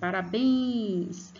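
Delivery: called out, forceful stress on bens of parabéns. Explaining syllables, saying it as if calling someone: called out, stressing bens. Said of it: "eu falo como se eu estivesse chamando alguém".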